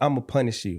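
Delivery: plain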